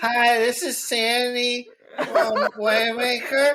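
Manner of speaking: put-on high, very slow, drunken news reporter voice. Acting out a reporter who shows up drunk: mock drunk reporter. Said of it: "Did she show up drunk?".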